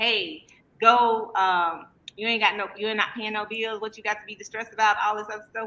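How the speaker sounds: usual speaking voice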